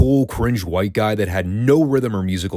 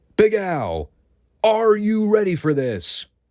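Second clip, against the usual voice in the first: very high, drawn-out, slow excited voice; 11 semitones higher than usual. Retelling Todd going up to the guitarist: imitating excited Todd. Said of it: "Todd's all excited".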